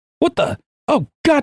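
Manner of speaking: very high, angry yelling shout with cursing. Game master voicing someone heard from downstairs, yelling and cursing. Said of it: "Like yelling, cursing".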